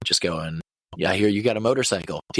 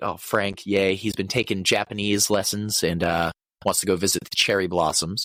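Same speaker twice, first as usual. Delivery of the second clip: ordinary talk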